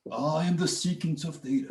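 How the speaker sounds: hushed, high storybook fantasy character voice. Explaining a math identity, the speaker says a term in a Lord of the Rings character voice. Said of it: "sounds like a character from Lord of the Rings".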